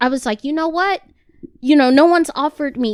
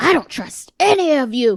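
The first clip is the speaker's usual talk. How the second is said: angry, fed-up, distrustful outburst. Retelling cursing out the pediatrician: imitating own angry past words. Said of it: "I was so mad".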